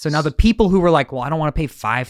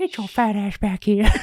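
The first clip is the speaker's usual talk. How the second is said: put-on high, whistling old-man voice; 7 semitones higher than usual. Friends discussing a whistling noise, one doing the Family Guy old man voice. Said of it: "would like whistle while he talks".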